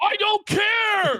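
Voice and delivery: shrill, very high, very loud screaming outburst. Mocking someone's claim that they didn't care: imitating someone screaming. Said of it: "Why are you screaming then".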